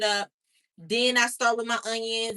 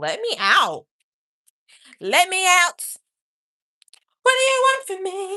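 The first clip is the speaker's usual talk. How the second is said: high-pitched, swooping pet-dog voice; 10 semitones higher, 8 dB louder than usual. Showing the dog in her crate, voicing Missy the dog. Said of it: "She's like".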